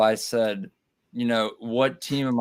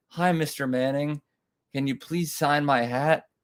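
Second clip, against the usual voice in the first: put-on childlike, small-kid little boy voice; 4 semitones higher than usual. Retelling asking a football player to sign a hat: little boy voice. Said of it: ""Little boy,"".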